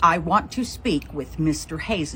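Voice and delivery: ordinary talk, nothing marked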